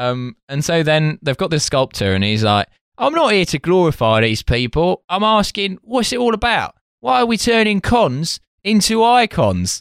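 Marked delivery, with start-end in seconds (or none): 3.0-9.8 put-on East London accent, pitched up. Quoting what a sculptor says, in an East London accent. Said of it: "you're doing him like an East London voice".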